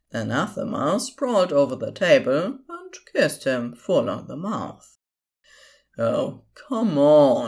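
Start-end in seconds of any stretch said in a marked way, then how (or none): 5.9-7.4 grousing, grumbling, complaining tone. A character watches two others kiss and is already forgotten, grumbling. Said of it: "Crowley grumbled".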